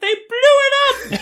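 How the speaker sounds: very high, squeaky, tiny chipmunk voice. Retelling what she said at the end of the movie, in a tiny chipmunk voice. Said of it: "This tiny little chipmunk voice".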